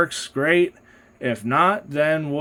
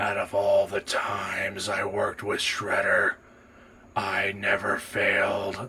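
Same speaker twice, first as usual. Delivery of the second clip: very low, crushed monster voice pushed out through crushed cords; 8 semitones lower, 7 dB quieter than usual. Voice actor demonstrating the character voice that strains him most, Metalhead voice. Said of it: "here's here's Metalhead".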